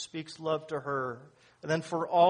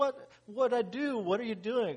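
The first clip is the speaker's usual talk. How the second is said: a little hurt voice, pitched up; 7 semitones higher than usual. Telling a joke about a couple, the wife as the husband leaves the bed: imitating a hurt wife. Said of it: "she's a little hurt".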